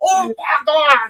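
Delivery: impression, high, screamed ringside announcer call.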